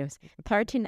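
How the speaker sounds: high, bad Australian accent.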